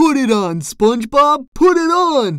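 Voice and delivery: loud, insistent, high-pitched yell. Patrick presses SpongeBob, shouting. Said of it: "Patrick shouted".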